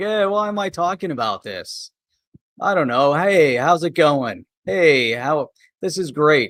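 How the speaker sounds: mock flat, listless delivery with zero excitement. A commentator imitates a man from a video, mimicking a flat, unexcited tone. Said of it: "his tone is kind of a little like".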